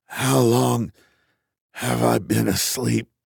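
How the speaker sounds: rough, raspy, hoarse voice. Waking up in pain, the narrator asks the computer, raspy voice. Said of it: "I say with a raspy voice".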